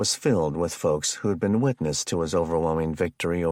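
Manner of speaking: ordinary delivery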